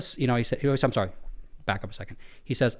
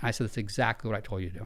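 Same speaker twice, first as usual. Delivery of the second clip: ordinary talk, nothing marked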